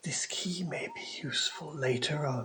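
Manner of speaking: hushed, breathy, whispery voice. Narrator voicing a tree that has just given the group a key: whispering tree voice. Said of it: "the tree just whispers again, just like a sort of words on a breeze".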